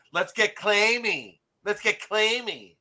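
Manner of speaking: put-on mocking voice. Repeating a friend's famous line in a voice he calls belittling: imitating Anthony's catchphrase. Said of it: "I'm using your famous line".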